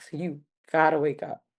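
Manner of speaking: mock whispering. Retelling whispering to someone who had died: retelling a whisper. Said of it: "whispered to him".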